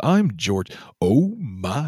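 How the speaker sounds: very slow, every word drawn out and savored. Showing how a famous actor talks: George Takei voice. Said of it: "George Takei just talks like this".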